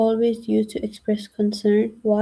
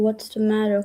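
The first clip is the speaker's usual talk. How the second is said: ordinary talk, nothing marked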